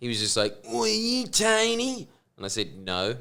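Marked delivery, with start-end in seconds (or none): 0.7-2.1 put-on very high slow drawl, "Tony" stretched out. Retelling a stranger approaching when their car broke down, imitating a drug dealer's voice. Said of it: "that kind of voice like this".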